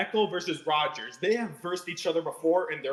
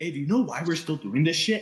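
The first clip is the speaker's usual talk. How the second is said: imitated whispering voice; 3 dB louder than usual. Acting out a quarterback whispering to his rival: whispering as Aaron Rodgers. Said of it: "Aaron Rodgers is gonna whisper in Falco's ear".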